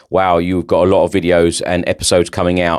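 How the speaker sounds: ordinary talk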